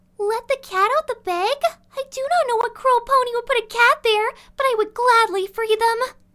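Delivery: very high, loud cartoon character voice. Reading out suggested lines from social media in a Fluttershy voice. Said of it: "I'm reading them in a Fluttershy voice".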